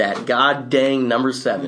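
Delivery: ordinary talk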